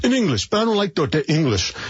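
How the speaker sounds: put-on high Brooklyn accent. Recalling a student answering the speaker's teacher father, imitating Anthony's Brooklyn accent. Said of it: "I'll throw my best Brooklyn accent in here".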